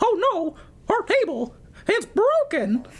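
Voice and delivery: very high pitch, swooping around. Leading the group's turn in a voice game, doing a Mickey Mouse voice. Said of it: "I want to hear everyone do Mickey Mouse".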